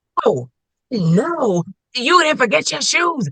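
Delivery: very high, climbing barked scolding voice. Retelling a mother scolding her kids, imitating a mother's aggressive bark. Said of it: "this is what I call the bark".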